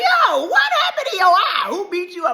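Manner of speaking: high, loud calling out.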